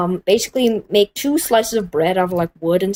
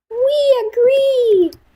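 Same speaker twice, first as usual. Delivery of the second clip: put-on kids yelling, pitched very high; 4 dB louder than usual. Speaker on a channel acts out the kids answering, imitating kids yelling. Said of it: "Can you hear them yelling?".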